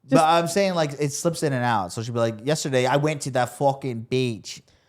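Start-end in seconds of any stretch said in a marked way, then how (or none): 2.4-4.6 badly imitated, poor put-on Boston accent. Showing someone how a woman's accent slips in and out, in a bad Boston accent. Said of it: "My Boston's accent's so fucking bad".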